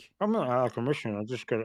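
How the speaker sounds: talking with mouth full, chewing through the words. Answering another speaker while eating sour candy: chewing while talking. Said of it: "I'm gonna sound like I'm chewing and talking".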